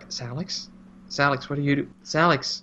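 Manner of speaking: soft, hushed whispering. Retelling a scene where she calls out to Salix: imitating a hushed whisper. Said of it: "a hushed whisper".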